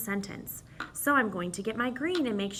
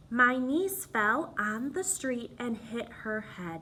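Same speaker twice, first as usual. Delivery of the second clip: voice halts firmly right after head. Demonstrating end punctuation by reading a sentence aloud: clear stop at sentence end. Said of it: "Did you hear my voice stop there?".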